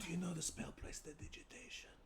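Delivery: whispered voice. In a game, a player asks a fellow party member about a spell, whispering. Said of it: "I'm whispering".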